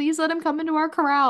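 begging and pleading, pitched way up. Retelling asking race staff to move a friend's corral: mock begging and pleading. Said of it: "begging and pleading".

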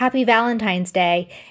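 ordinary delivery

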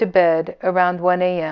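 ordinary delivery

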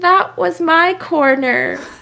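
very sad, dejected, high voice. Recapping a race where Mick tapped Seb, imitating Mick's saddest voice. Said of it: "in just like the saddest voice".

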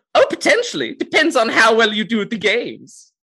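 very high, loud put-on elf character voice. A game master, in character as an elven host, answers a player's question; elven game master voice. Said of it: "elven man who is wearing kind of just some very plain clothes, uh, but he has a very fancy hat. He's got a, a bowler hat. That has got all the colors of the rainbow on it".

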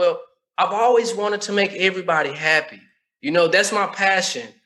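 ordinary talk

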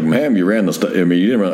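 ordinary talk

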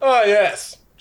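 loud, booming, high voice. Voicing the Loxodon answering when addressed: loud booming voice. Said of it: "the loud booming voice".

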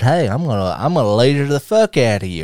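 ordinary delivery

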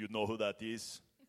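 put-on English spoken with an Austrian accent. Retelling a church leader coming up to him, with an Arnold Schwarzenegger accent. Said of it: "he learned English from Arnold Schwarzenegger".

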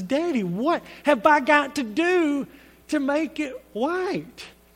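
put-on high, tearful little-girl voice, crying. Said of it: "And she's crying".

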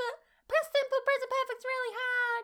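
very high, complaining whine, put-on student voice. Telling grammar learners not to complain, in a whiny student voice. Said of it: "That's my whiny student voice".

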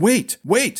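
high, terrified, terror-stricken cry. A dazed prince, ordered to the dungeon and held by guards, terrified. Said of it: "terror gripping him".

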